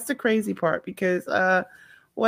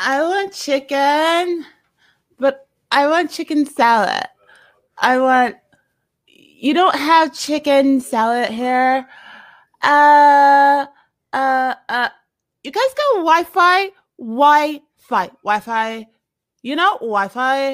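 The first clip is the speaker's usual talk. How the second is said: put-on loud, rambling drunk woman voice, drawn-out "uh"; 4 semitones higher, 6 dB louder than usual. Retelling a woman's complaint at a restaurant: imitating a drunk woman. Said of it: "You do a better drunk voice".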